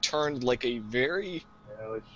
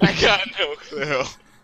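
loud, high, slow speech with laughter. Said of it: "Brad's just laughing and going".

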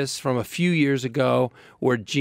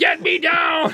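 angry yell, pitched higher; 4 dB louder than usual. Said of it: "he's yelling".

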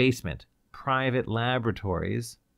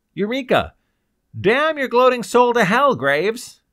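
shrill, very high, very loud furious raging yell; 12 semitones higher, 10 dB louder than usual. A man in a death cell yells at Graves through the speaker: furious yelling. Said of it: "he yelled furiously".

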